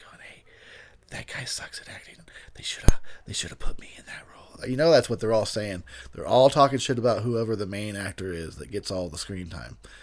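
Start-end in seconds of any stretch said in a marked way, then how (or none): 0.2-4.7 unvoiced, gossiping whisper. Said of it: "are you just whispering".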